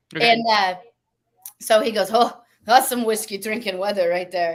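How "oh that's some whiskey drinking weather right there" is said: bad, gamely mangled put-on Costa Rican accent. Retelling what his bass player said on tour, bad Costa Rican accent. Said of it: "I'm going to murder his accent right now".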